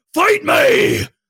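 very high, unhinged psychotic shrieking, acted. Retelling how a man lunged at a girl and screamed; retelling a psychotic scream. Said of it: "screams like a psychotic patient".

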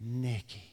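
loving, affectionate delivery. Speaker in love with Nikki shows how he says her name: saying Nikki lovingly. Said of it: "I say it with love".

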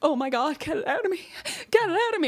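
totally freaked-out, very high-pitched pleading tone. Retelling a birthing woman's reaction to the afterbirth: imitating a freaked-out woman. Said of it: "she was totally freaked".

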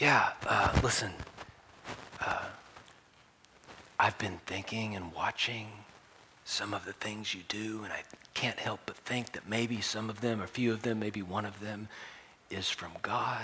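soft, hushed half-whisper under the breath. Acting out a night visitor speaking to a just-woken rabbi, half-whispering. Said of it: "why are we whispering?".

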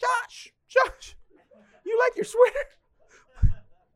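very high, slow, loud doting voice.

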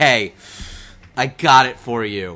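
mock-exhausted delivery. Retelling a struggling actor handing over bottled water he fetched, acting exhausted. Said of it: "he's disgusting tired".

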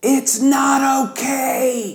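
mock very high trumpet-blast scream at full volume. Retelling a moment of screaming at the top of one's lungs: retelling a scream at full volume. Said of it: "I screamed at the top of my lungs".

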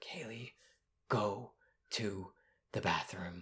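very quiet, slow, low whisper. Retelling an instruction the speaker gave to Kaylee, whispering. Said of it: "like in a whisper".

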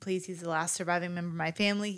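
plain

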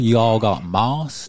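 slow, drawled West Virginia accent. Showing how to say a catchphrase, west virginia drawl. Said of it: "You got to say it with that West Virginia drawl".

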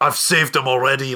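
put-on Scottish accent, slipped into unintentionally. Retelling a character's line, the speaker slips into an accidental scottish accent. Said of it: "oh no, sorry, I'm just doing a Scottish accent now".

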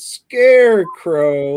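very loud, slow, stretched-out smug jerk drawl. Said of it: "like a big dickhead from Halloween Night".

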